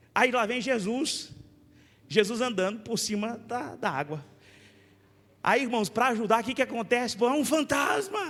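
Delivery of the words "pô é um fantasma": scared startled outburst, pitched up. Retelling the disciples seeing Jesus on the water: imitating frightened disciples. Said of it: "O medo".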